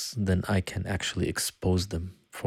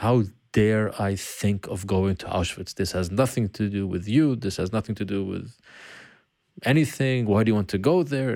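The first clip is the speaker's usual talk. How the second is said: plain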